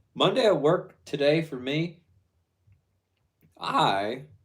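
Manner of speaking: voice cracks, pitch breaking mid-word on me. Recording a message to Karen about the day at work: voice cracking. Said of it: "that voice crack was awful".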